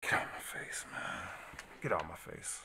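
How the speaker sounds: mock exasperated, fed-up, frustrated breathy whisper. Reacting to a news story being read aloud: frustrated. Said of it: "I'm frustrated".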